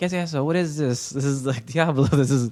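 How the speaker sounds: high-pitched, disapproving voice.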